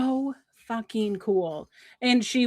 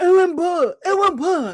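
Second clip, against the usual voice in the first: mock mouth-full speech, higher and louder; 8 semitones higher, 8 dB louder than usual. Retelling an ad where a caller answers with peanut butter in his mouth: imitating talking with mouth full. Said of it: "he's got his peanut butter in his mouth".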